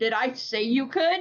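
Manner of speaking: mock dead-serious, fully earnest delivery. Retelling a husband's reply: imitating a dead-serious question. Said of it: "and he was dead serious".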